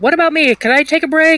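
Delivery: loud yelled objection from a distance. Narrating a game scene, voicing a character who yells. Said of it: "You just hear Cat yell".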